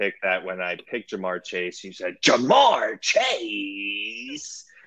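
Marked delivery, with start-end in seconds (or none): 2.2-4.6 pitched very high exclamation. Retelling the other speaker's draft-pick reaction: imitating his exclamation. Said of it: "that was my impersonation of you".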